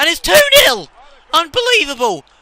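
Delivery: very high, very loud excited shout with voice cracking. A commentator calls his team's second goal, voice cracking with excitement. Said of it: "My voice may have just broke there".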